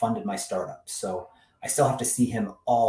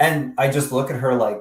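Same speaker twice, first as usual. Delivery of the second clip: normal talking voice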